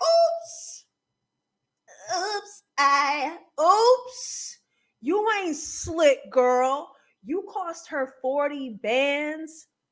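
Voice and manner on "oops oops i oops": high, put-on innocent tone. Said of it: "But acting like".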